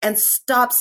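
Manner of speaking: plain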